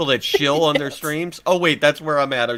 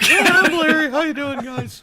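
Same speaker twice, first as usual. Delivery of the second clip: very high, teasing, mocking put-on voice; 12 semitones higher than usual. Mocking another speaker's babbling: mocking imitation of Larry. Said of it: "I don't sound like Kermit the Frog".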